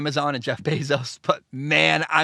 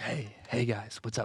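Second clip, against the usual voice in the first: very quiet whisper; 6 semitones lower, 13 dB quieter than usual. Host greets listeners, dropping into a whisper. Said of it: "I like got whisper".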